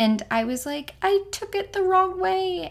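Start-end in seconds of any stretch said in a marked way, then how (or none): 1.0-2.7 high-pitched, tearful crying with a shaking voice. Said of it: "like, crying and my voice was shaking".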